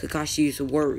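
ordinary talk

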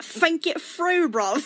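friendly put-on British accent. Doing a 'british people be like' bit; mock british accent. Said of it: "British people be like".

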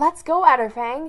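very loud, eager, excited rallying cry. A narrator reads a character urging a companion to set off, excitedly. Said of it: "Daisy Rain said excitedly".

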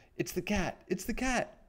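very high, frightened squealing cry. Narrator reads Squeak the mouse's line to Nibbles, crying out in fright. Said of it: "he cried".

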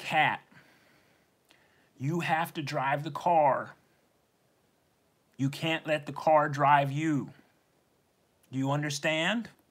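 kind, benevolent, but firm delivery. Retelling how a driver's ed teacher grabbed the wheel and spoke to Kat: retelling a benevolent, firm voice. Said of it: "with a benevolent and firm voice".

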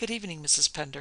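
ordinary talk

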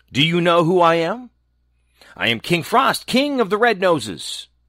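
sharp, high, snapped-out words. King frost, alighting beside a maiden, speaks to her: snapped out. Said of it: "he snapped out".

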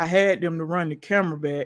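low, deliberately deepened, put-on masculine voice. Retelling what he said after borrowing the car, in a put-on masculine voice. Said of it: "This me imitating. He don't talk like this, y'all. But you know, I'm just trying to give a more masculine voice".

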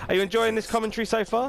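high, fast mock presenter voice.

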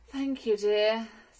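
feeble, weak voice. Mrs. Large answers: weakly. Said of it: "said Mrs. Large weakly".

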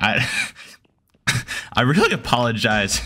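voice cracking partway through the line. Apologizing to first-time viewers of the channel, the speaker talks with a voice cracking. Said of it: "that was a voice crack".

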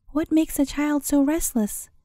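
plain reading voice

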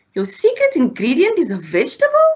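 astonished, high, swooping surprised cry. Catching Mom adding butternut to the pancakes, crying out in surprise. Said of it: "he cried".

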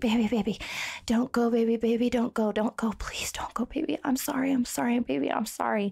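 frantic, panicked pleading, over and over. Retelling how a panicking partner begged her not to leave: imitating a panicked plea. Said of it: "he panics and he flings across the bed".

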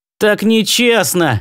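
persistent, insistent tone. On a spaceship, one man keeps pressing his crewmate, insisting. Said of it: "не сдавался Мастерс".

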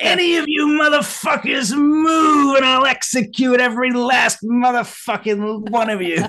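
very high, shrill, shrieked screaming. Speaker explaining a campaign name from Pulp Fiction, screaming Yolanda's holdup threat.

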